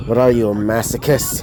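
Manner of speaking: ordinary delivery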